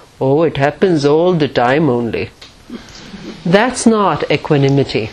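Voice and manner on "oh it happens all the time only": put-on Hindi accent in English. Retell the film star's answer to the film crew in a Hindi accent. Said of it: "he said with the wonderful Hindi accent".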